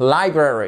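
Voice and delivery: library with stress on first syllable li. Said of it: "accentuation sur la première syllabe".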